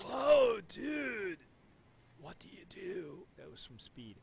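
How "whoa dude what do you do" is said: bad movie-star voice, high, swooping, stretched, sing-song. Tasting tequila with a co-host, doing a Keanu Reeves impression. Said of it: "in my worst Keanu Reeves".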